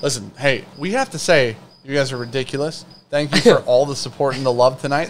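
ordinary delivery

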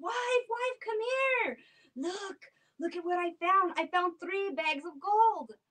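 excited, high calling out. Telling a folk tale, voicing the husband calling home: yelling out to his wife. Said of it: "Yelled out to his wife".

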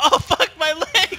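drawn-out hurting cry. Quoting what the other player's game character yells when shot, imitating a yell. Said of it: "your guy yells".

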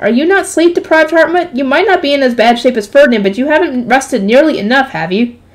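ordinary delivery

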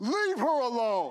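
loud, lion-like roaring voice. Picturing the lion roaring the rebuke: roaring like Aslan. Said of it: "Can you picture just Aslan roaring".

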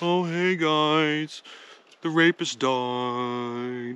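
put-on sorrowful tone, very slow. Joking about how Coleman announces a death, put on the fake Coleman sad voice. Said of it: "the fake Coleman sad voice".

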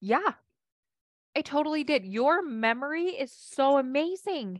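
earnest, sincere, very slow and drawn out. Showing how to answer a husband who brings up the past, sincere, not patronizing. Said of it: "I'm being legit right now".

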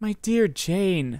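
sudden, bursting-out exclamation. Narrator reading, Elizabeth answers Jane: exclaimed. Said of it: "exclaimed Elizabeth".

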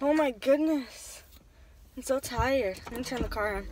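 out of breath, puffing hard. Vlogging after putting the cart away and getting into the car, breathing hard. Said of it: "I'm breathing hard".

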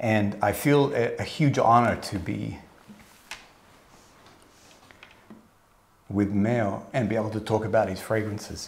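slow, choked-up voice catching with emotion. Welcoming viewers and speaking of the honor of being there, getting emotional. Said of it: "Why am I getting emotional for?".

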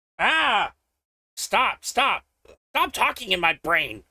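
shrill, very high, loud goblin cry. Speaker voices one goblin among the voices heard, in a raised goblin voice. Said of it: "Do you hear one raised goblin voice?".

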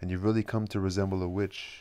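plain reading voice

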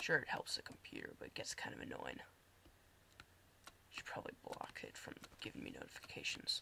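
whispered, soft, breathy mumble to self. Streamer talking to viewers while playing a game, mumbling. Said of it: "I'm mumbling".

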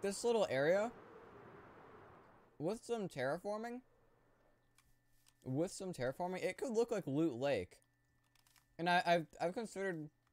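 talking with full mouth. Flying over a game map while eating, talking with food in mouth. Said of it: "I have food in my mouth, so I sound gross".

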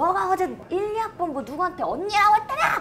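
high-pitched, accusing, interrogating tone.

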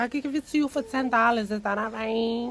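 imitated Spanish accent. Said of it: "Like that".

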